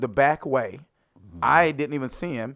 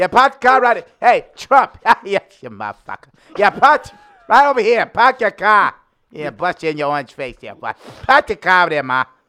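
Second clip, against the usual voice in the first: put-on loud, raised Boston accent throughout; 5 semitones higher, 8 dB louder than usual. Riffing on characters from Boston in The Departed, doing a Boston accent. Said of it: "they were from Boston".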